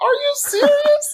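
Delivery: tearful, very high-pitched, weepy disbelief. Retelling hearing about a fellowship, the speaker acts out their own weeping. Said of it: "Like I started weeping".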